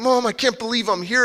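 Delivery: put-on annoyed teen voice. Retelling his 14-year-old self in Kmart talking to his mom, mock ticked-off. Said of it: "kind of ticked off like".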